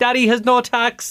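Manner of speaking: put-on very high, slow tiny child's voice. Retelling a story of a child calling out from the back: imitating a little child's voice. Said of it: "this little voice popped up from the back".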